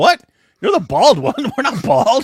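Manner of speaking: high-pitched, loud, indignant crowd voice.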